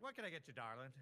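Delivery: put-on Southern accent. Describing eating out in the South, quoting a server, imitating a Southern server. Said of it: "and they always be like".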